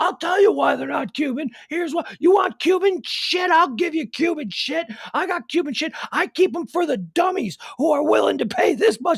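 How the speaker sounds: mock worked-up rant. Retelling a guy's reply when asked why his cigars weren't Cuban: imitating someone upset. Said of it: "And he got real upset".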